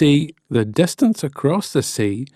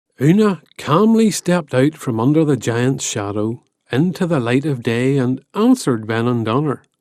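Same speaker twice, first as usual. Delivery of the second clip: plain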